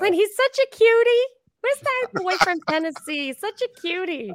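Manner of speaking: put-on very high voice of a ninety-three-year-old woman. Asked to say it like their mother, the speaker does an elderly woman impression. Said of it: "is a impression".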